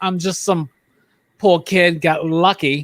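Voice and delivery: slow, drawn-out, deliberate delivery. Quoting a favorite movie line the actor delivers: Christopher Walken impression. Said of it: "When he's just like".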